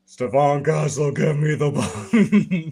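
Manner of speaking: booming it out big and slow. Imagining a tall player calling for the ball: Andre the Giant voice. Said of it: "if he sounded like Andre the Giant".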